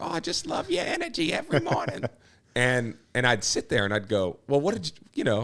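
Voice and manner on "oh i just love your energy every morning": put-on very high-pitched little old lady voice. A TV presenter retelling what older viewers would say, imitating an older lady. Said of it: "older crowd, and they'd be like".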